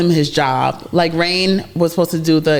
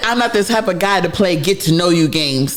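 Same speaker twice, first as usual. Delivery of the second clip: ordinary talk, nothing marked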